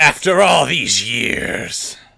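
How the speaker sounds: ghostly pirate voice. Voicing a spirit just released from a vessel: pirate spirit voice. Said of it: "the spirit of a pirate emerges".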